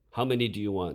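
insistent. In front of the class, Dickie demands an answer of Kailo. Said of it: "demanded Dickie".

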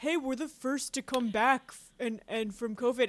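dude-bro talk. Co-host imitates other leagues after the NWSL Challenge Cup, in a bro voice. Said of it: "a good bro voice".

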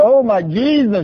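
upset cry, high, slow and drawn out.

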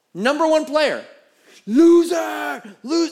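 put-on very high, shrill, loud jeering yell. Retelling a young guy heckling a tennis player: imitating someone yelling insults. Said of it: "starts yelling out profanity".

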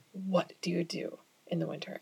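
soft, hushed, nervous whisper. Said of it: "And so they're like".

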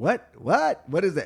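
very high, shrill, loud, repeated delivery. Acting out a mother asked about Twitter, imitating mother-in-law. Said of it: "imitation of my mother-in-law again".

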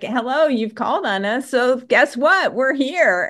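mock chuckling, amused. Recounting how an archangel appeared and greeted the speaker: imitating an archangel laughing. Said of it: "he was kind of laughing like".

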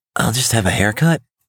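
timid, small voice. A young man answering a barber's greeting, meek. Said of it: "says the young man meekly".

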